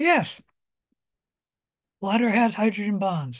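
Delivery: talking with mouth full of food. Confirming a student's answer in class, talking with mouth full. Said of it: "I got my mouth full".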